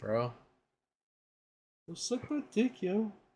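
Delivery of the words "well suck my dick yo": put-on high-pitched cartoon kid voice. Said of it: "that's Irwin".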